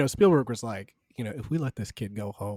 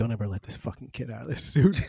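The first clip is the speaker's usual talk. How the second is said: hushed, theatrical stage whisper; 3 semitones lower than usual. Retelling a director reacting at an audition: imitating Spielberg half-whispering. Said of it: "you can hear him whispering".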